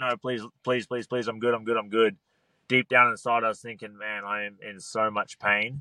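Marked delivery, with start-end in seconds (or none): 0.0-2.2 repeated pleading, begging tone. A fighter recalls the referee wanting to stop it, retelling pleading with the referee. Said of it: "I pleaded with him".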